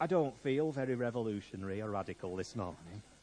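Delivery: put-on low, soft voice in a North of England accent.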